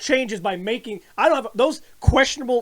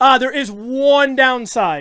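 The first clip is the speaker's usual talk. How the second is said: ordinary delivery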